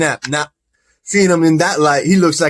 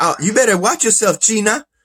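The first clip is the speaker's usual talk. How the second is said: mock Mexican accent, much higher; 5 semitones higher than usual. Speaker acting out girls confronting someone, in a Mexican accent.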